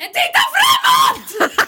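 put-on shout. Retelling how a cyclist screamed at a passerby: imitating a cyclist shouting. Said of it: "då skriker hon så här".

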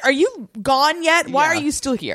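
put-on uncaring, dismissive manner. Imitating a character who wants a visitor gone: imitating Vicky not caring. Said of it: "She's like".

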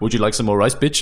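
imitated non-native English, poor pronunciation. Retelling how a man kept offering Lucy more rice, imitating broken English. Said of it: "his English wasn't great".

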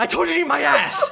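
very high, ragged, rough shriek. Narrating a game scene as a king appears in lightning: King Titus Harper screaming. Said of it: "who screams".

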